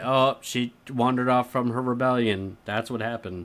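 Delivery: plain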